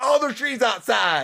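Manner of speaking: put-on high Southern accent. Arguing about proof of god, quoting believers: southern accent impression. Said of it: "using a southern accent".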